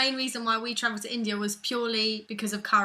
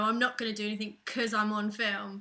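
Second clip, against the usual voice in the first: ordinary talk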